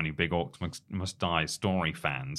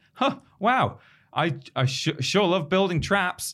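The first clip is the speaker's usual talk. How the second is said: mocking irritating bad voice-acting delivery, higher and louder; 13 semitones higher, 6 dB louder than usual. Imitating a new game character's voice acting: imitating irritating bad voice acting. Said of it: "he's just kind of a bit irritating, and he's sort of, oh, he's going".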